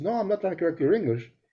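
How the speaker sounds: ordinary delivery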